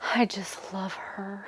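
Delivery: slow, soft, lovestruck whisper.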